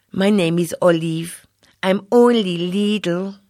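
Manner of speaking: Greek-accented voice.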